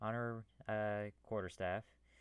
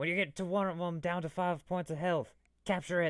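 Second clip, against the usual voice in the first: high, loud, commanding battle shout; 9 semitones higher, 8 dB louder than usual. Voicing a character in the middle of a fight: quick shout. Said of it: "he shouts out really quickly".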